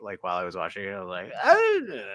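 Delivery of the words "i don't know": put-on drunk voice, higher and louder. Showing how a practiced fake drunk voice sounds. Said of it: "practiced my drunk voice out loud".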